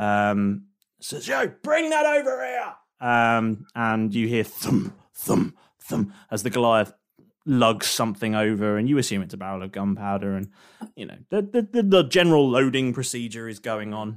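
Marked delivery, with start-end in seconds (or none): 1.3-2.7 very high, loud shouted yelling. Voicing a crew member calling to the Goliath: crew member yelling. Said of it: "one of them yells to the Goliath".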